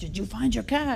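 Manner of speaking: put-on heavy French accent, laid on thick. Retelling a neighbor's early morning phone call: very thick french accent. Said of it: "in his very, very French accent".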